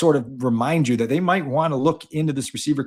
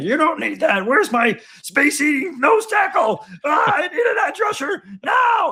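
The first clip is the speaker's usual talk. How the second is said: very high-pitched put-on puppet bear voice. Imagining fans complaining about a draft pick, Fozzie Bear impression. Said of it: "was that your Fozzie Bear impersonation".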